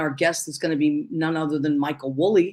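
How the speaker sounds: plain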